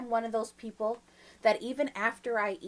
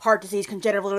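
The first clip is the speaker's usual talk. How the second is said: mock advertisement disclaimer voice; 7 dB louder than usual. Mocking drug ads that rush through side effects, Micro Machines guy rapid-fire disclaimer. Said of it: "they try to be slick and they're all fast".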